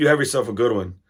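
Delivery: very harsh delivery. Retelling what the worker said while handing over food: imitating a very harsh tone. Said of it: "in a very harsh way".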